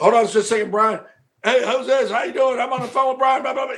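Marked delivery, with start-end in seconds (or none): 1.4-3.8 distracted, dismissive, half-attentive tone. Acting out how the friend would put a caller on hold: imitating Corey Macklin. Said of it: "he'd be".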